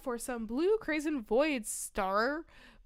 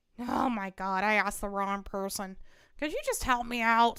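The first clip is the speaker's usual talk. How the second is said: snotty put-on voice, much lower; 5 semitones lower than usual. Speaker trying out a voice for the character Ernest, snotty Ernest voice. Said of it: "He's like snotty".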